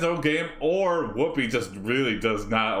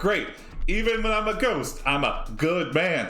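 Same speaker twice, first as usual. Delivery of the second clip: very sarcastic, mocking, pitched-up delivery; 7 semitones higher than usual. Retelling a ghost's line, the speaker delivers it as a mock-sarcastic retelling. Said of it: "very sarcastically. Like, Tony's like".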